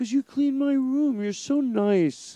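put-on very high, loud, squeaky toddler voice. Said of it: "in his voice".

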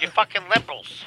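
smug late-night comic impression.

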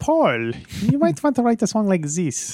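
put-on German accent, very high and swooping. In a time-travel joke where Hitler shows up: Hitler voice, German accent. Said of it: "It's a good German accent, right?".

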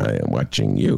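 rough, creaky, rasping tough-guy voice. Warning a crop report guy he's being watched: Robert De Niro imitation. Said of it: "That's my Robert De Niro imitation".

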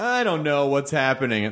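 ordinary talk

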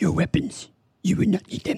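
very high, small, wise-sounding creature voice. Having offered his best impression, the speaker now does a Yoda impression. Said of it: "my best Yoda impression".

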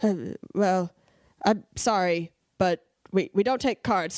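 mock, put-on embarrassed tone. Retelling the cashier's reply after being called rude: imitating an embarrassed cashier.

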